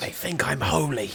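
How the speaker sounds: whispered line, in character. Voicing a toothless woman whispering into a player's ear: whispering in character. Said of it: "as to whisper something in your ear".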